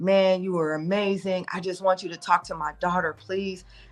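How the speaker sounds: put-on near-tearful, pleading voice. Retelling a father's words after the show: imitating someone almost crying. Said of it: "He's almost crying".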